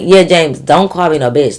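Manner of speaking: ordinary talk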